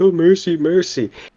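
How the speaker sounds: put-on sarcastic plea. Retelling a character's line from a scene: imitating a sarcastic plea. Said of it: "kind of being sarcastic".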